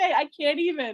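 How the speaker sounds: high-pitched words spoken through laughter. Reacting to a chat message about client payments, laughing while talking. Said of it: "I'm sorry for laughing like a crazy person".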